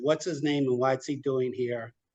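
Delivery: normal talking voice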